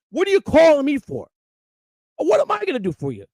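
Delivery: mock furious, angry, high swooping yell. Retelling scolding someone who called crying about his dog: retelling screaming at someone. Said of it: "I'm screaming at him".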